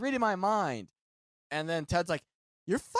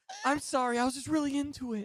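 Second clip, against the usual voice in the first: sheepish, embarrassed, higher-pitched woman's voice; 8 semitones higher than usual. Speaker acts out a hypothetical woman apologizing after an outburst during sex: mock-embarrassed woman apologizing. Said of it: "And she's like embarrassed".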